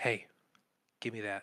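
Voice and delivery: urgent half-whisper, under the breath. Standing by a wall, unseen, a player asks another character to hand something over, half-whisper. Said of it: "I'm going to whisper".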